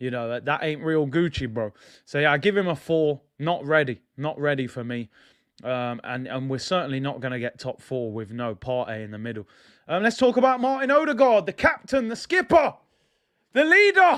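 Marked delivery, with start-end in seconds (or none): 10.0-14.2 passionate yelling, higher and louder. Talking about the team captain, passionate shouting. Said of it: "I have to shout because I get passionate".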